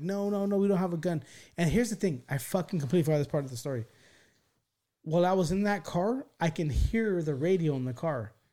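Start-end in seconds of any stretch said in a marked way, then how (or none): 0.0-1.2 frantic, urgent, repeated scream. Retelling being held in a car by police, the speaker reenacts screaming. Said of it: "And I'm screaming top of my eyes".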